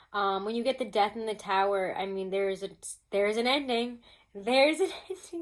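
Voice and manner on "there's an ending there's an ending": words broken up by laughter. Explaining what two tarot cards mean together: laughing while talking. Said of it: "I'm laughing".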